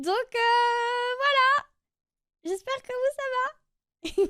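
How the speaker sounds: stressed, jittery speech. Introducing her dubbing playlist to viewers after saying she is stressed; nervous. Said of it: "Je suis stressée".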